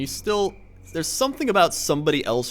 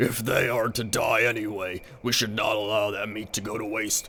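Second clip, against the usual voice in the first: put-on orc voice, lower pitched; 3 semitones lower than usual. Voicing an orc character, in an orc voice. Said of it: "this is like my orc voice".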